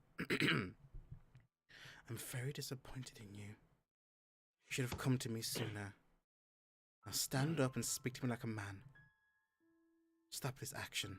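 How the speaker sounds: very quiet, close, private-sounding murmur. Retelling what she says close to your ear, very quiet voice. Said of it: "says to you like very quietly".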